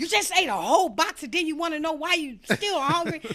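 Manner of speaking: shrill, very high, very loud screaming. Recalling yelling at people on a TV show while watching; retelling screaming at the TV. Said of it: "I would be screaming like".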